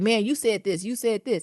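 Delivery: normal talking voice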